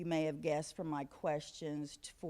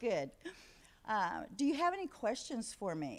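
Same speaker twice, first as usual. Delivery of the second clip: high, swooping, sing-song classroom teacher voice; 6 semitones higher than usual. Speaker addressing the room after handing out paper copies, in a teacher voice. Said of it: "I'm going to put on my teacher voice".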